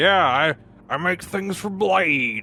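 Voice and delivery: very slow, gravelly, grizzled Southern drawl. Speaker explains how impressions get swept into one grizzled voice; gravelly voice with southern tang. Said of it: "you got like the gravelly voice".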